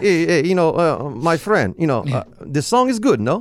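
mock Russian man voice. Retelling what a Russian manager said at lunch, Russian accent. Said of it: "but it sounds Russian".

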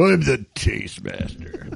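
cheesy 80s barbarian movie villain voice, low and rough. Hearing a job title, a host says it in an 80s barbarian movie villain voice. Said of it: "Sounds like a really bad villain in a 80s like barbarian movie".

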